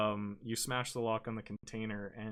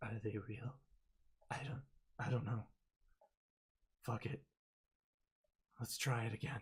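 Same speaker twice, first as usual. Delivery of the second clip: hushed, hoarse, raspy whisper; 5 dB quieter than usual. A game master voices what Elvish speakers hear as helmets click on: low raspy whisper. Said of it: "in a low, raspy whisper".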